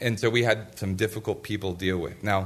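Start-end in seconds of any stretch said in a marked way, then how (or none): none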